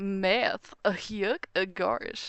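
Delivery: loud, very slow cartoon dog voice. Showing a habit of saying things in Goofy's voice, Goofy voice. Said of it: "just say things in like Goofy's voice".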